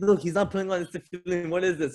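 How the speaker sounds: high, complaining, scolding voice.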